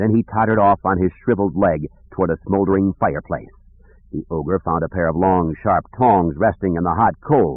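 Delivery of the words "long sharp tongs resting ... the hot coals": ordinary delivery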